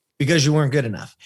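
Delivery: flat deadpan delivery. Retelling what a man said to his face, flat out and deadpan. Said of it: "Flat out, deadpan".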